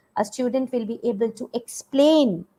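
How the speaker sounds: leaning hard on the word "explain". Listing action words for learning objectives: stress on explain. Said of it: "I'm using action words and I'm stressing on that action words".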